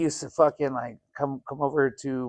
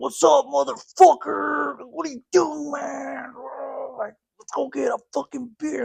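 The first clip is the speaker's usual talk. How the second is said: very high, gritty, rough voice; 11 semitones higher than usual. Retelling how a friend greeted him at the door: imitating how a friend always talked. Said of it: "the way he always talked to".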